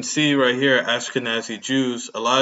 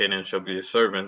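usual speaking voice

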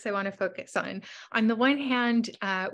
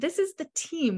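team lifted high and stressed. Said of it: "I wanna emphasize that word team".

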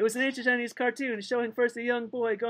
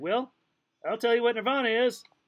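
ordinary delivery, nothing marked

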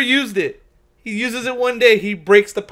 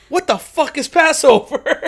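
sudden blurted outburst, full volume, really loud, high; 6 semitones higher, 4 dB louder than usual. Retelling a story, the speaker quotes what a man suddenly said: really loud outburst. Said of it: "he just says really loud".

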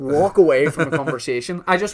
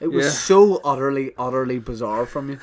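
normal talking voice

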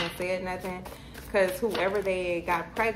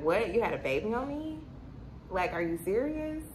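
acted, grossed-out, disgusted disbelief; 3 semitones higher than usual. Speaker plays the listener reacting to this person's news, acting out disgusted disbelief. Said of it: "you are disgusted".

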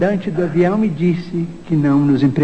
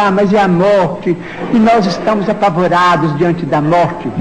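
ordinary talk, nothing marked

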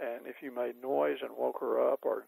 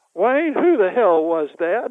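very loud, high blurt, room-filling; 8 semitones higher, 15 dB louder than usual. Retelling what a woman said in a restaurant: retelling someone speaking very loudly. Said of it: "Nell says so loudly that everybody in the restaurant could hear".

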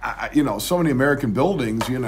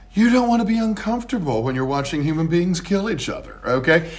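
pitched-up, knowing, deliberately sarcastic little dig; 6 semitones higher than usual. Talking about shade for spectators watching people kill each other, deliberately sarcastic. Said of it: "I'm going to be a little deliberately sarcastic here".

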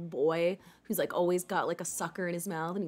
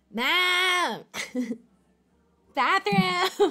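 very high cartoon kid voice, "ma'am" drawn out; 12 semitones higher, 7 dB louder than usual. Voicing someone who yells at the speaker for the bathroom, in a Cartman voice. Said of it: "he's Cartman".

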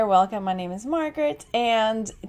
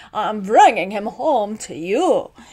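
goofy put-on character voice, louder; 6 dB louder than usual. Trying to recreate a character voice that sounds goofy: goofy Doctor Pinderschloss voice. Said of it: "trying to recreate Doctor Pinderschloss".

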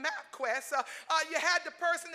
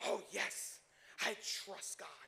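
grave, solemn, deep, serious, hushed whisper; 8 semitones lower, 10 dB quieter than usual. Speaking to believers, acting out a believer's answer in a mock-serious deep voice. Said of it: "the voice gets deep. It gets very serious".

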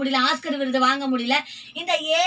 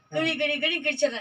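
usual speaking voice

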